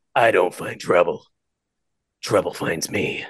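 hushed, breathy whisper in dramatic movie-tagline style. Asked to say a tagline in a villain voice; Snake voice. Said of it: "The Snake voice".

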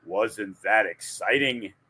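flat, droning monotone voice. Retelling how a guy would comment after a cool move, in Ben Stein monotone. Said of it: "in the most monotone voice ever".

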